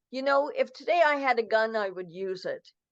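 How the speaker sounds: usual speaking voice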